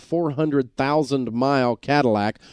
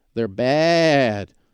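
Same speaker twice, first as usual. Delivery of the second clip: put-on bleating, baa-ing sheep voice. Speaker talking about new car deals, bleating sheep impression. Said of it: "that's my impression of a sheep getting fleeced".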